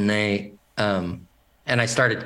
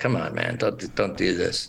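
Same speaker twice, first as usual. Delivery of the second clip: mock pathetic, pitiful, begging tone; 5 semitones lower, 4 dB quieter than usual. Retelling how a scene partner pushed someone off his legs: imitating a pathetic plea.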